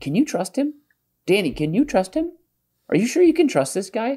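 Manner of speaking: high, singsong, needling mocking tone.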